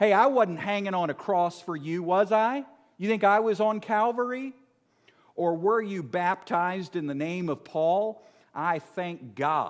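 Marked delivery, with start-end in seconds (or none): 0.0-8.2 gently mocking, needling, light sarcasm. Paraphrasing Paul's rebuke to the believers: sarcastic Paul voice. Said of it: "I love it when Paul gets a little sarcastic".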